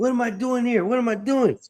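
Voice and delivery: very high-pitched, belligerent, combative outburst. Retelling the mother's words after she gets up: imitating mom being combative. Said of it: "She's combative at this moment".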